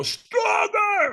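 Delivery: mock top-of-the-lungs scream, very high and loud. Retelling how the trainer got in his face: imitating someone screaming. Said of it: "screams at the top of his lungs".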